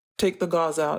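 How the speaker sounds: plain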